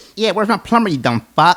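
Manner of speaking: high, loud prank-caller yelling voice.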